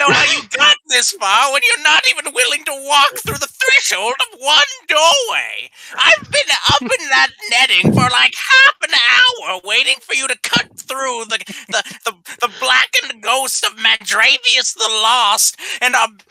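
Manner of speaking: high, nagging, scolding harangue. Narrator voices a woman walking down the hall, pointing at the adventurers: nagging. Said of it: "pointing at you and nagging you".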